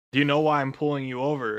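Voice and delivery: normal talking voice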